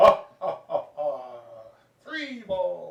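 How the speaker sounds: loud, very bad, cheesy vampire voice with cackle. Talking to Dave, the speaker does a very bad Count impression. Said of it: "Did my very bad impression of the count".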